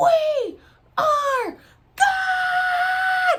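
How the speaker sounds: very loud, high, shrill yell, God drawn out. Retelling what a friend yelled during the ceremony: imitating someone yelling loudly. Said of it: "and yells it so loud".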